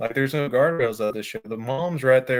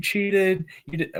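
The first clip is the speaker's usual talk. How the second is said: put-on high, loud kid's yell; 6 semitones higher than usual. Recalling a kid at the guardrail shouting at the speaker; imitating a kid yelling. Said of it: "he's just yelling at me like".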